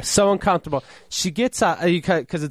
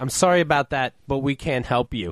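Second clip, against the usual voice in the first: normal talking voice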